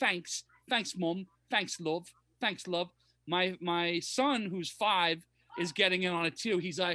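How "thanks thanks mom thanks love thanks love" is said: put-on British cartoon-child voice. A parent imitates their daughter and her friends talking like Peppa Pig. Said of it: "they were talking like Peppa Pig".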